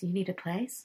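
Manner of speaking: put-on whisper. Retelling how a lady offered them a place to stay: imitating a whisper. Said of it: "whispered it to us".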